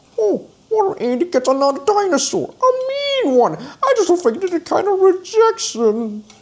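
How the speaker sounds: very high toy dinosaur puppet voice, "a" drawn out. Showing off a dinosaur toy with moving jaws, the speaker makes it talk like a puppet. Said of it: "He like talk like a puppet can talk like".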